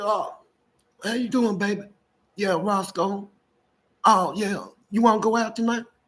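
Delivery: put-on polite telephone voice. Retelling calling a lady under a fake persona, use your Roscoe voice. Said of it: "I had a different voice for four ladies".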